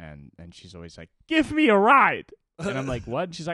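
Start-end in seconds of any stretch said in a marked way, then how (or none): 1.3-2.3 mock very high, very loud furious yell. Retelling how Greta demands a ride, mock-angry Greta demand. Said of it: "She gets really fucking mad about it".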